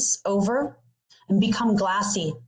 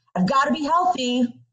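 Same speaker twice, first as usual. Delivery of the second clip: mock, mildly irritated, insistent, pitched up; 5 semitones higher than usual. Retelling pushing vegetables in a pan, repeating it: retelling own irritated words. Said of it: "a little added irritation in my voice".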